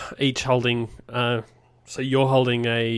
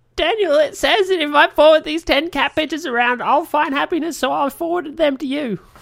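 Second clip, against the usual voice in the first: very high, loud, nagging mother squawk; 6 dB louder than usual. Quoting a line from an earlier episode: impression of Bean's impression of mum. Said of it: "I should do it again".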